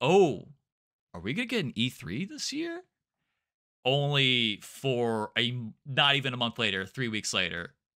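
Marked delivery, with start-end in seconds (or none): 0.0-2.8 mock coy, teasing, sing-song, hinting hopeful tone. Retelling what an e3 organizer implied off air: imitating a teasing hopeful tone. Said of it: "she said it in a tone that was like".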